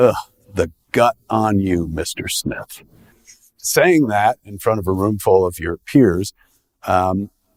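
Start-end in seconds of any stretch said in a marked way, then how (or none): 0.0-2.8 put-on disgusted voice. Retelling what a fourth grade teacher said to the speaker, imitating her disgust. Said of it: "with the most abject disgust in her face and says".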